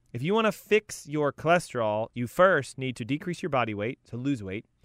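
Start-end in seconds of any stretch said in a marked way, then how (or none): none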